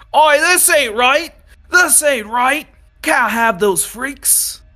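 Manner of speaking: very loud, very high, shrill yelling. Narrator voices soldiers deep in the ranks protesting the decision, yelling from the crowd. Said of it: "Just yelling from within the crowd".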